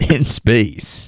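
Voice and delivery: put-on old-time radio announcer voice. Complaining about a phrase, the speaker says it in a sixties radio dj voice. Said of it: "say it in that like sixties radio D J voice".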